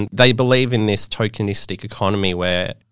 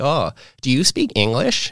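put-on American woman's accent, high and unhurried; 5 semitones higher than usual. Retelling how a stranger approached abroad: imitating an American accent. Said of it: "American accent".

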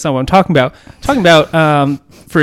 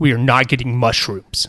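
put-on worked-up, emphatic tone, much lower; 3 semitones lower, 4 dB quieter than usual. Retelling what a friend said on a past visit; imitating a worked-up friend. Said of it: "Okay, calm down".

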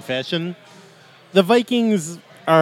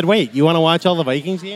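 plain

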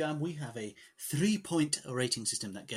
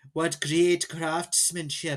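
put-on loud, clumsy, terrible Irish accent; 2 semitones higher, 5 dB louder than usual. Imitating a character from the show: terrible Irish accent. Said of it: "some Irish guy with a terrible accent".

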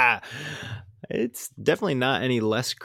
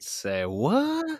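very high pitched, clueless, playing-dumb tone; 9 semitones higher than usual. Answering news that a film is picture locked: mock confused. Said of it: "I love when you play dumb".

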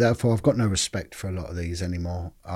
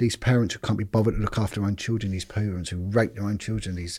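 usual speaking voice

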